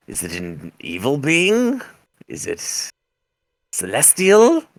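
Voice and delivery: scornful sneer, swooping pitch on each phrase. Narrator voicing a female character questioning a player, sneering. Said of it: "she kind of sneers when she says that".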